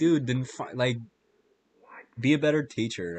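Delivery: ordinary delivery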